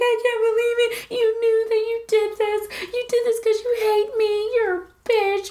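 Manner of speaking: mock sobbing, high, tearful crying voice. Retelling how she saw her champagne in another woman's hands, imitating someone crying. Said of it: "And she starts crying, and she's like".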